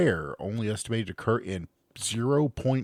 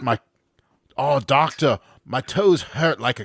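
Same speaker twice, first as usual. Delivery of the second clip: terrible put-on Australian accent; 4 semitones higher, 7 dB louder than usual. Reading a case report from Australian doctors, voicing the patient in a terrible Australian accent. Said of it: "I do terrible accents".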